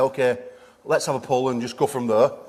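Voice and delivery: ordinary delivery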